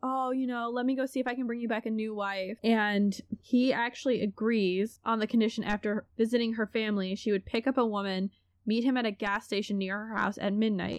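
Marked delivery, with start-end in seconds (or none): 0.0-2.6 mock pleading, begging voice. Telling a story, acting out how a woman pleaded with a man.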